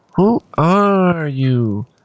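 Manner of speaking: obnoxious, taunting, parroting delivery. The impostor halfling Vel makes a face and mimics the player: obnoxious mocking imitation. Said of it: "mimicking you in an obnoxious voice".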